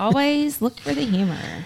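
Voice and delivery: a little sarcastic.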